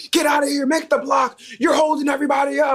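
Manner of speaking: put-on, very high, shrill hollering. Retelling how a man in a parking standoff yelled: imitating a man yelling. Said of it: "why are you yelling at me".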